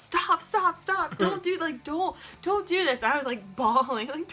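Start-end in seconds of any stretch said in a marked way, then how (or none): 0.0-3.0 mock screaming, much higher, slower. Retelling how he screamed at the television during a scene, imitating him screaming. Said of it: "He's screaming at the television".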